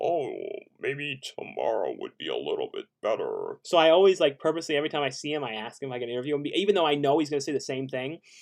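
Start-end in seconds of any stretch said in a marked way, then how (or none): 0.0-3.6 very deep, swooping, cool-sounding voice. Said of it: "the coolest, deepest voice in the world".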